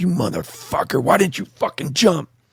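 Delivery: play-acted, high-pitched screaming yell. Back in the helicopter, speaker retells screaming at a man who didn't jump. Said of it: "And I'm screaming at Spicer".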